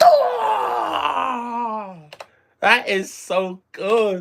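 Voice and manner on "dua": high, shouted, mock fighting battle cry. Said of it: "and then she just goes".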